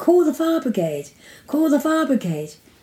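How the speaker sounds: loud, urgent, high yelling.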